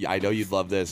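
low, condescending put-down tone.

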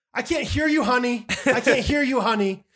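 sarcastic, sweetened-up, loud, high-pitched tone. Speaker acts out using a term of endearment, mock-sarcastic sweet talk. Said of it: "it just sounds like a sarcastic".

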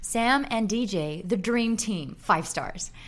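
reading aloud in a put-on American accent. Reading a five-star listener review aloud, in an American accent. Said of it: "I'm going to do it in my American accent".

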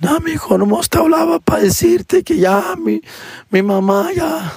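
tearful, sobbing, very high, drawn-out crying voice. Retelling a phone call from his crying mom: imitating his mom crying. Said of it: "she's like crying her ass off".

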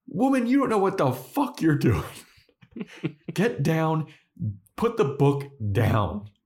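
mock exasperated voice, high-pitched.

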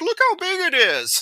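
playful, very high, slow joking voice. Speaker describes characters joking with comically huge crack rocks: retelling a joking exclamation.

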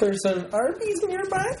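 high, sheepish, small squeaky voice.

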